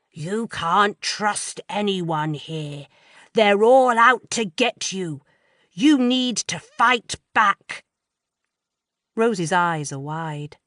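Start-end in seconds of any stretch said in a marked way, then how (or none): 0.2-7.8 rough, rasping, slow, angry voice. Reading a character imitating a voice she heard: lowered raspy voice. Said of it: "She lowers her voice and says in a raspy tone".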